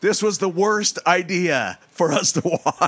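play-acted panicked, freaked-out, high scream. Retelling a woman's reaction after she looks down, imitating her freaking out. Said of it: "She screams. She freaks out".

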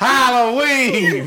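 loud, very high, belted-out outburst. Repeating another speaker's movie-killer line, sounding like Steve Harvey. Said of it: "Why everybody sound like Steve Harvey?".

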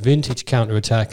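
ordinary talk

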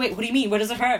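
fast, rushed, flustered, panicked, alarmed worry. Retelling how Edward panics in the book: imitating Edward panicking. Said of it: "'Cause he actually panics".

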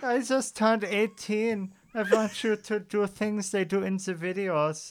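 heavy, thick, put-on German accent. Quoting a young german man, in a very german accent. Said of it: "he's like very German".

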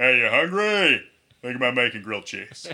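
very loud, big, booming character voice. Answering the other speaker who names Patrick Warburton: Patrick Warburton impression. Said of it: "I think of Patrick Warburton".

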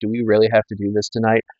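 usual speaking voice

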